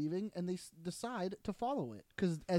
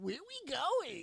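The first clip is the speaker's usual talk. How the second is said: derisive tone, raised pitch; 7 semitones higher than usual.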